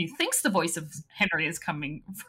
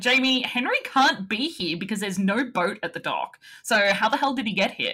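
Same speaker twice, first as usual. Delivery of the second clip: ordinary talk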